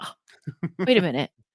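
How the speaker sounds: put-on talking through laughter. Speaker recalls catching themself feeling offended, retelling a laugh while talking. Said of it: "I have to laugh about it going".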